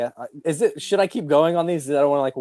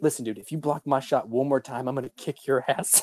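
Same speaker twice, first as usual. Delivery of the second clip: imitated whisper, much quieter; 6 dB quieter than usual. Speaker retells how an extra whispered to him: retelling a whisper. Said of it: "he's like whispering to me".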